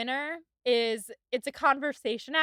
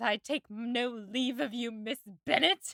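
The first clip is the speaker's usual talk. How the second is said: furious tone with a little voice flip. Retelling a favorite scene, quoting Lady Catherine de Bourgh: imitating her mad voice flip. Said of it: "does her little voice flip and is so mad".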